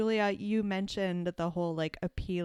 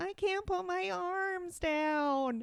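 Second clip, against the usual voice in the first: put-on very high, adorably nasal little boy voice; 13 semitones higher than usual. Quoting the little brother from A Christmas Story, in an adorably nasal voice. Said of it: "in this adorably nasal voice".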